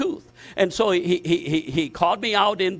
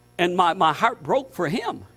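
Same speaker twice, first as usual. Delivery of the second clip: ordinary talk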